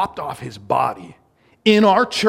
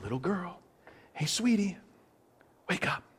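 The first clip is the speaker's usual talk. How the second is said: hushed, very quiet whisper; 3 semitones higher, 12 dB quieter than usual. Retelling how he uses a pet name to wake the girl, imitating a whisper.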